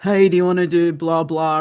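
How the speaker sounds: acted flat, unenthusiastic, going-through-the-motions delivery. Retelling how a team member invites kids to an activity: imitating an unexcited voice. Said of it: "in not a very excited voice".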